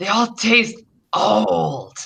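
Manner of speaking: high-pitched, strange, hungry monster voice. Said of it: "one of them saying".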